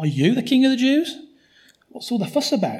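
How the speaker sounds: sarcastic stress on you. Retelling someone's question to another man, with mock-sarcastic stress on 'you'. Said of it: "the way he says you is sarcastic".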